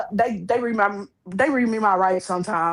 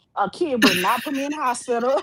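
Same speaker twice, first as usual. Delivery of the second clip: put-on jazzy, sassy voice, pitched up; 5 semitones higher than usual. Retelling what a hospitalized woman said: imitating a sassy retort. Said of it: "she got a little jazzy".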